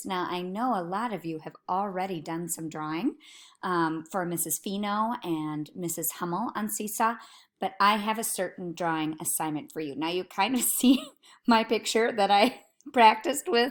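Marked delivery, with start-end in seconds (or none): 9.9-13.7 talking through laughter. Showing a practice drawing made on a laptop, laughing while talking. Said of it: "I can't stop laughing".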